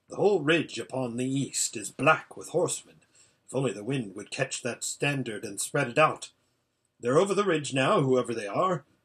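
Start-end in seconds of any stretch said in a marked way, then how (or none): none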